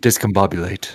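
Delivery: hushed voice. Voicing a character leaning into an ear: whispering. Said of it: "Sutha leans into his ear, whispers".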